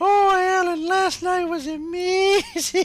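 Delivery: very high, loud, slow, drawn-out woman's voice. Imitating Alan's girlfriend from Smiling Friends. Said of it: "Why does it sound like Alan's girlfriend from Smiling Friends?".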